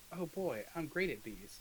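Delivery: slow, drawling delivery that sounds sarcastic. Reacting to being asked to roll an arcana check, sounding sarcastic. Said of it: "You sounded sarcastic".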